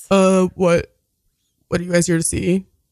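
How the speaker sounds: deep, low put-on bouncer voice. Role-playing the bouncer questioning arrivals at the front, in a deep bouncer voice. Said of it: "A deep voice".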